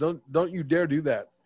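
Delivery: ordinary delivery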